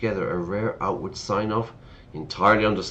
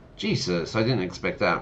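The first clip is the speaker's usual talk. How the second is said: ordinary delivery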